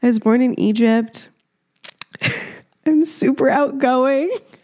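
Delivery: put-on giggly laughing talk. Retelling an awkward introduction, laughing while talking. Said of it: "I can't stop laughing at how cringy".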